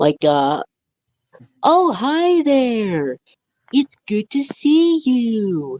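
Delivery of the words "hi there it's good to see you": very high, slow sing-song, you stretched out. Speaker showing off an impression of Bob West's Barney, Barney the dinosaur voice. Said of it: "I'm good at Bob West's voice impression of Barney".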